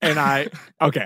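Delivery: plain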